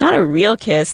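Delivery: ordinary delivery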